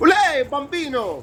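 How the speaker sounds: put-on Italian-American New York accent. Showing others which Italian accent they can do, New York Italian accent. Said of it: "the New York Italian accent".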